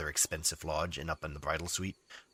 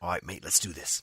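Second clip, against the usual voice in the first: poor, unconvincing put-on Australian accent. Voicing a character agreeing to a small party: bad Australian accent. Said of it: "Tam definitely pipes up in a bad Australian accent".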